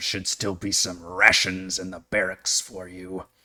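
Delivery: very hushed, quiet, forced through clenched, gritted teeth. Game master voicing a character who won't budge, answering the player through gritted teeth. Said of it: "he says through his gritted teeth".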